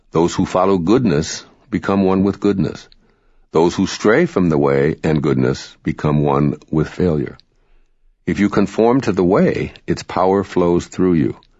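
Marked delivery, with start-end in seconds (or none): none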